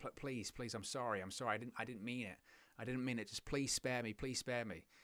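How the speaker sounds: play-acted desperate begging, stammering, tripping over words. Acting out an opponent on his knees in the ring: imitating someone begging. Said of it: "he's begging. He's praying".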